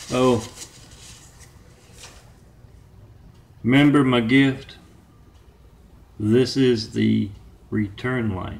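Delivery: showy big-voice announcement, kept mild. Retelling what a man said to the girls, in a big booming voice. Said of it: "in that big booming voice".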